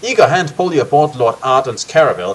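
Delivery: ordinary delivery, nothing marked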